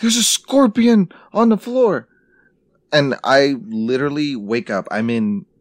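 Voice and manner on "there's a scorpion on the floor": play-acted very high, shrill shriek of fright. Retelling how the others woke them over a scorpion: acting out others screaming. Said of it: "these fuckers start screaming like".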